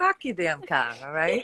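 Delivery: Bostonian accent. Asked by the other speaker to say "park the car": Boston accent. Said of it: "can you say, "Park the car"?".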